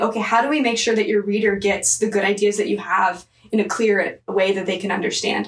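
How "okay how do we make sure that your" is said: plain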